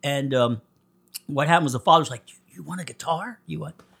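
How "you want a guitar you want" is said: barely-there, hushed, very quiet half-whisper. Acting out a father's words in a story told on a podcast: half-whispering. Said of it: "I'm whispering and miming a lot".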